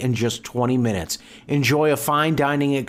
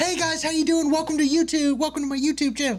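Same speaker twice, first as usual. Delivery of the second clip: bubbly, very high-pitched vlogger voice. Describing a tattooed YouTuber and imitating her channel intro: imitating a bubbly energetic YouTuber. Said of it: "known for her bubbly".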